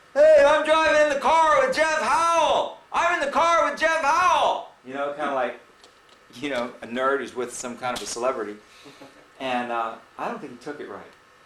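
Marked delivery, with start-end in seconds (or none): 0.2-4.7 shrill, booming, very loud, high, drawn-out excited yell. Retelling riding in a car and yelling out the window: retelling a yell. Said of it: "I'm yelling out the window".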